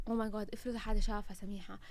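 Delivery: ordinary delivery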